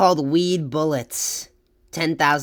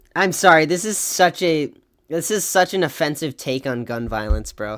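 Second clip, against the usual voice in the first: ordinary talk, nothing marked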